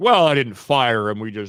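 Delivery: hedging, evasive voice. Speaker quoting James Gunn's reply to a co-host, in a James Gunn impression. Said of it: "I love your James Gunn voice".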